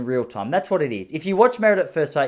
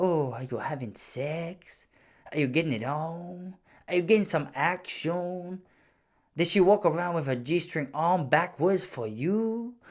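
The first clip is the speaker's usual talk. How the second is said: soft, put-on South American Spanish twang, female voice; 7 dB quieter than usual. Retelling a woman's questions to a couple, in a put-on Spanish accent. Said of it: "I probably haven't done justice to the fact that she's Spanish".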